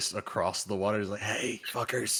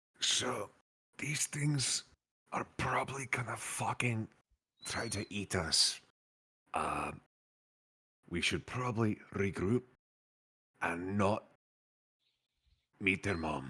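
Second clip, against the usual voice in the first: hushed, quiet whispering voice. A player leans over to a companion in the game, whispering. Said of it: "whisper the Kari and just be like".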